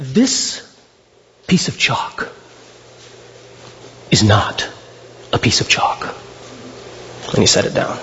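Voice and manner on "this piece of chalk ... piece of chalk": very hushed, whispered delivery. Quoting a speaker addressing a room of students, retelling in hushed tones. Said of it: "very much so in hushed tones".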